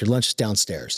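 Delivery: plain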